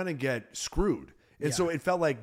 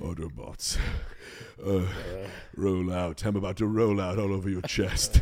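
very low, sultry, sexy voice; 7 semitones lower than usual. Joking that Chris Hemsworth makes every line sound sexual: sexual Chris Hemsworth voice. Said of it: "it sounds sexual".

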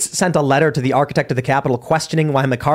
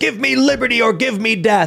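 put-on fired-up, high-pitched, angry, forceful delivery; 9 semitones higher than usual. Acting out a founder standing up, asked about independence: acting angry. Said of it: "he gets angry and he goes".

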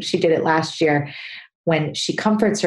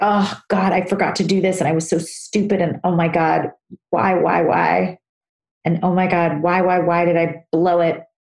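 snappish, snippy, berating scolding tone. Demonstrating the inner voice that scolds oneself after forgetting something, snippy self-scolding voice. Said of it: "my snippy voice".

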